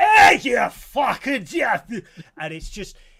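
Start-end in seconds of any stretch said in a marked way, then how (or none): 0.0-1.9 very loud, drawn-out, thick, broad Glaswegian holler. Describing how Ronan really sounded, imitating Ronan's Glasgow accent. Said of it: "Glasgow makes the Edinburgh accent the Queen's English".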